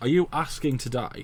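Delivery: ordinary delivery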